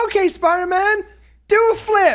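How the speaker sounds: high, goofy voice of a random guy.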